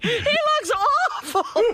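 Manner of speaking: mock very high, shrill, screeching scream. Retelling how Ronnie reacted on seeing Jackie: retelling Ronnie screaming. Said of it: "He's just screaming".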